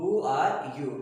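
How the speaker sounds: pitch falls at the end on "you". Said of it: "So here it is falling intonation".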